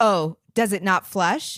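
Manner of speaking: mock judgmental tone. Retelling what a woman in the washroom asked: imitating an accusing question. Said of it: "she says it like, "Are you a gross person?"".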